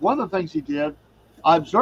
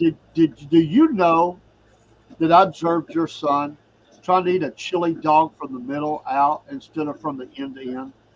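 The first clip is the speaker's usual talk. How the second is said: ordinary delivery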